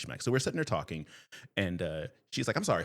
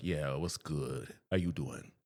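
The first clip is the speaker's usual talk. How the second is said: New York vampire voice, lower pitch, slower; 3 semitones lower than usual. Actor describing the vampire character he portrays, doing a new york vampire demeanor. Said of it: "kind of a more like".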